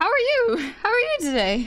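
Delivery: loud voice breaking and cracking mid-line. Thanking a viewer for ten gifted subs, voice cracking. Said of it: "Sorry, voice crack".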